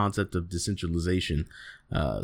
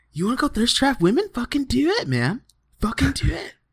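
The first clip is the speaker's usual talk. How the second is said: very high-pitched California surfer-dude voice. Imitating Gary Vee's pep talk: imitating Gary Vee as California surfer dude. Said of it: "Why does he sound like, like, like twenty-year-old, like, California surfer dude?".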